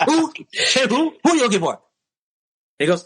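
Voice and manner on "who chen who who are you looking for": very high, aggressive delivery. Retelling how a man answered someone asking for a classmate: mock-aggressive questioning. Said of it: "and kind of aggressive".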